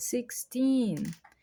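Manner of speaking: put-on "sixteen" with long, strongly stressed "-teen". Counting English teen numbers: stress on teen in sixteen. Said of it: "enfatizar essa última sílaba, vai falar ela mais forte".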